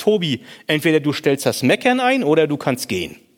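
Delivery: plain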